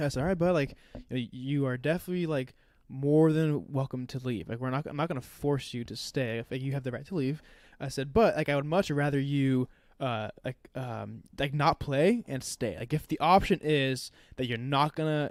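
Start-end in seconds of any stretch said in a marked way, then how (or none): none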